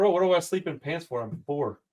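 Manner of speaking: ordinary delivery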